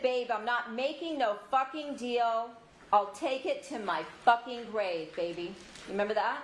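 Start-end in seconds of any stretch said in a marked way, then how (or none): none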